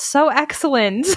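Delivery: dripping, sarcastic tone. Listener reacts to someone's story of being cheated on, sarcastic. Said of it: "The sarcasm is so real".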